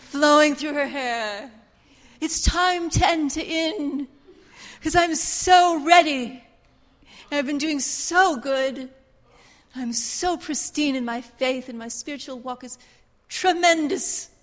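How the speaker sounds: showy, put-on British accent. Speaker voicing an imagined spiritual prophetess beside Joshua, in a put-on British accent. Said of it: "shall I go into my British accent".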